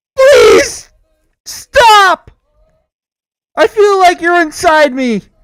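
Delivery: very high, very loud, shrill, piercing scream of pain. Telling a story, the speaker acts out what the boy screamed: retelling a scream. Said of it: "and he screamed".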